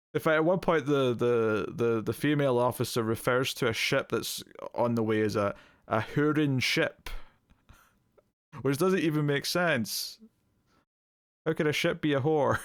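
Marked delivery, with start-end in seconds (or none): 11.4-12.6 quick, full put-on Scottish brogue. Speaker questions a remark by a female officer, in full Scottish accent. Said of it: "me going full Scottish accent?".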